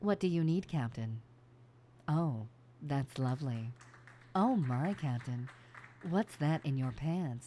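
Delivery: teasing, suggestive onboard AI computer voice. Voicing the ship ai in an adult game, ship ai character voice. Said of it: "I talk like this the whole time".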